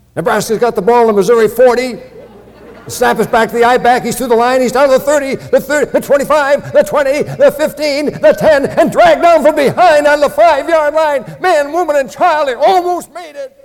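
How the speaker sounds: very high, very loud radio sports play-by-play. Recalling an early radio voice his family heard in nebraska, imitating a radio announcer. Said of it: "one of the first radio voices we became familiar with sounded like this".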